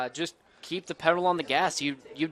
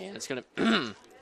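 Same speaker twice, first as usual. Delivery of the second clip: breaking voice, cracking in the middle of a word; 3 semitones higher, 4 dB quieter than usual. Calling a kick going out of bounds during the game, voice cracking. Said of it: "Sorry about the voice crack there".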